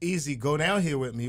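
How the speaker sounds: ordinary talk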